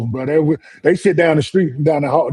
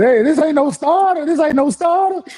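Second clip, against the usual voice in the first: put-on very high-pitched, frantic yelling; 13 semitones higher than usual. Recalling being chased and jumping a fence, the speaker is retelling a yell. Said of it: "I'm yelling".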